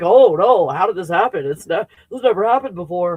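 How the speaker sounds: put-on feigned, sarcastic surprise, mocking fake shock. Mocking people who act surprised something happened: mocking fake shock. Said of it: "If some people are acting like".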